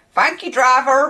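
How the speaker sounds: put-on loud small-town regional accent. Imitating how people thank the bus driver: imitating local accent. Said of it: "they'll say it in that accent".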